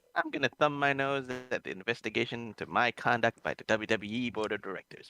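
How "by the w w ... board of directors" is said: ordinary talk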